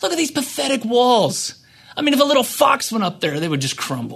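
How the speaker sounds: scornful, mocking voice. Speaker retelling how Tobiah mocks the quality of the builders' work; retelling Tobiah's mockery. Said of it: "he mocks the quality of the work".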